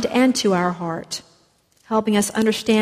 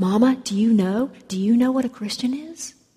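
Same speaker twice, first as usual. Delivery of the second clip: imitated whisper. Retelling a joke about a boy asking his mother: imitating a whisper. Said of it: "the boy whispered to his mother".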